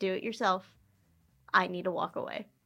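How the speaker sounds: acted calm, even voice. Retelling how they answered someone yelling at them on stage, retelling saying it calmly. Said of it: "i said it as calmly as possible".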